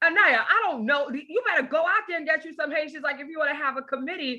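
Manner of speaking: mock terse, sharp, snapped-out delivery. Retelling how Rev snapped back at her: imitating Rev Sharpton snapping. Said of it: "Rev snaps on me like".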